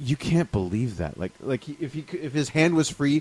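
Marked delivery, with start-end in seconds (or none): 0.0-1.2 flat, plainly delivered, matter-of-fact. Quoting a cartoon scene where He-Man calls someone out: imitating He-Man's matter-of-fact delivery. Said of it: "'Cause it's so matter of fact".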